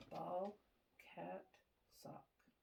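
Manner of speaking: soft, barely voiced whisper. Doing a whisper hearing test behind the patient: whispering. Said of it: "I'm gonna whisper three words".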